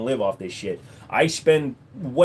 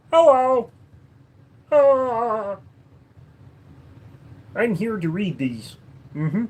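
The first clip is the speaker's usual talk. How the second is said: higher pitch, taken slow and unhurried; 9 semitones higher than usual. Reading out someone's questions, the speaker does a Kermit the Frog voice. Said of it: "Kermit the Frog here".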